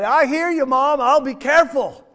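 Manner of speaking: put-on cheerful holler. Telling a story of a boy answering his mother, retelling a cheerful holler. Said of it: "he hollers back very cheerfully".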